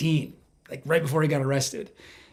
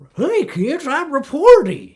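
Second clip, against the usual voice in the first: very high, loud, cartoonish mascot character voice; 10 semitones higher, 7 dB louder than usual. Joking about a security startup called Reporty, in Reporty mascot voice. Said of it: "That's my impression of a character named Reporty".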